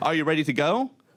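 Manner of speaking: ordinary delivery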